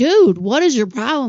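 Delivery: loud scream. Recounting what she screamed at the speaker down the stairs, imitating someone screaming. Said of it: "Like screaming at me down the stairs".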